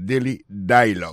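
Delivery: daily and dialogue stressed on first syllables. English pronunciation lesson on the phrase daily dialogue: first-syllable stress in daily dialogue. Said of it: "Yo pesé plus sous premier syllabe là".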